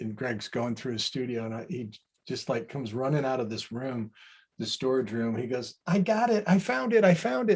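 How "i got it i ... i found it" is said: very high-pitched, thrilled, excited outburst. Act out Greg running out of the storage room in his studio, in Greg's voice. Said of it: "And in Greg's voice".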